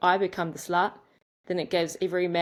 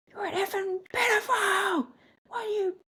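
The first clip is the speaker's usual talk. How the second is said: put-on, very high-pitched screaming yell. Retelling screaming at a man who kept following: retelling a scream.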